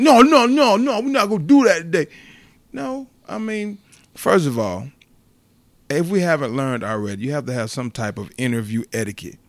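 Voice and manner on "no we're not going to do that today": very high, loud, raised, snappy tone. Recounting how a man snapped during an interview, retelling a snapped reply. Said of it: "He kind of snapped when he said".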